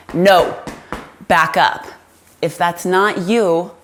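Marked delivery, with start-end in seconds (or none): 0.1-1.8 steady, firm, authoritative voice. Teaching how to use your voice, giving a command firm and authoritative. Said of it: "I'm saying with authority".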